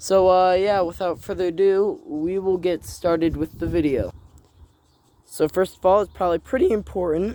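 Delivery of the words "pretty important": fast delivery, voice breaking and cracking. Youtuber starting to explain his game in the video, voice cracking. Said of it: "excuse me, voice crack".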